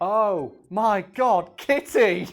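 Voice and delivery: acted, very slow, loud, drawn-out shocked cry. Retelling how a friend loudly exclaimed on finding the mess: retelling a loud exclamation. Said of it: "and then loudly exclaim".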